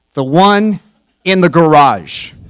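very loud, booming shouted voice. Retelling a father's reply about which wrench: imitating a loud parent voice. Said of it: "they go in a loud voice".

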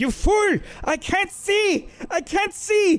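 panicked, frightened yell.

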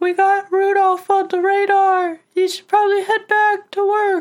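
very high, loud, cheerful jolly elf voice.

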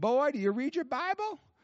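put-on Southern accent, pitched very high. Retelling a phone call, asking the caller's question in a Bob Jones accent. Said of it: "I'm giving you a little Bob Jones accent".

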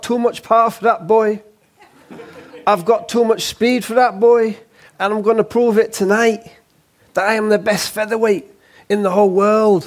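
put-on cocky Cockney geezer accent. Retelling a yorkshire featherweight boxer's pre-fight boast: cockney wide boy impression. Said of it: "that was a really good impression of him".

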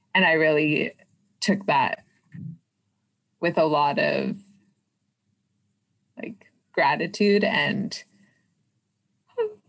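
choked-up crying, halting, words breaking apart, voice breaking. Recalling being trusted with something during a visit, crying. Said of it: "no i'm crying".

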